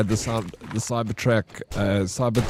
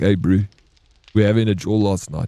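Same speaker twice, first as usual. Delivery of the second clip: put-on South African accent; 4 dB louder than usual. Speaker quotes the guys in a game they watched being played: south african accent. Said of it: "A lot of South African accents".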